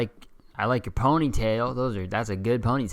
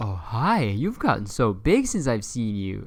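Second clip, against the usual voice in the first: put-on slow, swooping, talking-down baby talk. Retelling how adults greeted the speaker as a kid: imitating adults baby-talking a kid. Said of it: "people would fucking talk to you like you're, like, a baby".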